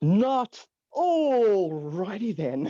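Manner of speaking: very slow, every word drawn way out. Playing Ace Ventura when the barista gets his coffee wrong: Ace Ventura impression. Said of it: "Ace Ventura is at a barista".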